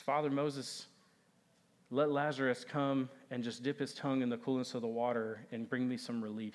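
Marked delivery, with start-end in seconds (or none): none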